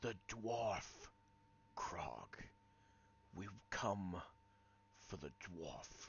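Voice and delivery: deep, breathy female whisper, barely audible. Describing an unseen character heard in a scene, deep, breathy female whisper. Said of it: "it's deep and kind of breathy for a female".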